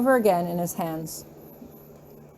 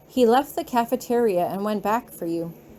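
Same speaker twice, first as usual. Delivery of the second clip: ordinary delivery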